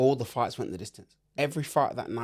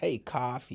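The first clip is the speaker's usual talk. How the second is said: convincing, casual put-on American accent; 4 dB quieter than usual. Retelling how Americans called out the name at the airport: imitating an American accent. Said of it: "That's a really good accent".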